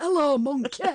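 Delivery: croaky voice. Explaining how they sounded on waking: Johnny Vegas voice. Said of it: "I sounded just like that".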